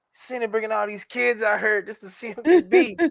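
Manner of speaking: high-pitched, laughing while speaking.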